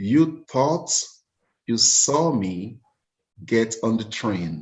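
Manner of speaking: very slow, halting, word by word, broken mid-phrase. Retelling what he said, looking straight in the eyes: imitating someone speaking very slowly. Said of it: "he said very slowly".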